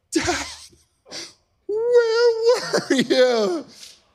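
acted, high-pitched, crying out between sobs. Retelling how his son ran up after he searched the building; imitating his son sobbing. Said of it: "he's like sobbing".

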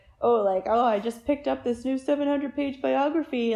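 mock ribbing, teasing, poking-fun tone. Imitating a husband to make fun of him: mocking impression of husband. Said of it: "to make fun of him".

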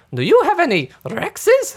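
high, loud, swooping cartoon voice with swingy pitch. Describing an old game where the character plays Go Fish, in a Mario voice. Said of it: "he would talk like".

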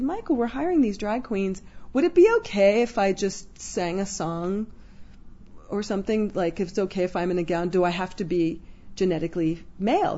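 ordinary talk, nothing marked

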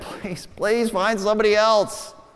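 desperate, pleading put-on begging. Retelling Moses refusing God's call: imitating Moses begging. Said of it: "Moses just begging him".

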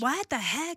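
high-pitched, exasperated tone.

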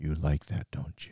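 mock low seductive voice. Joking about low, hypnotic talking by doing it: put-on very low sensual tone. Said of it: "And that very low".

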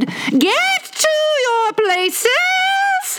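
booming, thunderous shout, very high, slow, drawn out. The queen orders the latecomers to their places: shouting in a voice of thunder. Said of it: "shouted the queen in a voice of thunder".

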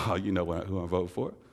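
mock chuckling, laughing and amused through the words. Retelling a father's reply to being asked his vote: imitating dad laughing. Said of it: "And he laughed at me".

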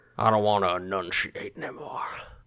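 fake mumbled southern accent. Answering a question about an actor's accent: Jeff Bridges southern mumble. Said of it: "southern mumble accent he loves so much".

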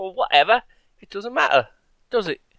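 bad put-on Cockney accent. Parodying a car insurance pitch, the speaker does a bad put-on accent. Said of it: "my accents have gone down the toilet".

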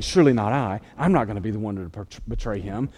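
low, soft, hushed whisper. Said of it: "they're all whispering".

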